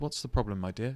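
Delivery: mock very calm, measured, reassuring tone. Recalling going in to speak to a distraught mother: retelling own calm reply. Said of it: "Very calm, very measured".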